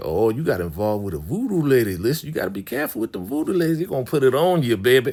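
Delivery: high, playful, sing-song teasing tone. Retelling characters joking on Floyd: imitating teasing. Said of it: "so they joking on Floyd".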